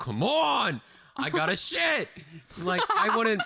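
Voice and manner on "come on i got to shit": impatient, frustrated holler, very high and very slow. Imagining someone in the bathroom, the speaker acts out: retelling a yell. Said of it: "somebody just fucking yelled".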